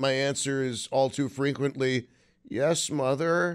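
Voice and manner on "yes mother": pitiful, pathetic little voice, very pathetic. Answering his mother's offer of another blankie: acting very pathetic. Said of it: "In a very pathetic voice".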